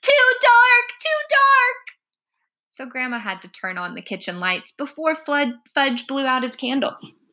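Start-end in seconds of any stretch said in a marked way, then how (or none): 0.0-2.0 very high, slow, drawn-out calling out. At a birthday party, a guest calls out before the candles, crying out. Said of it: "Sam cried".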